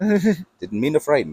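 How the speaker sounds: put-on Canadian accent, done for effect. Voicing a book character as imagined: put-on canadian accent. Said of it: "I imagine, like, an, uh, Canadian accent".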